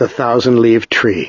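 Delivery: ordinary delivery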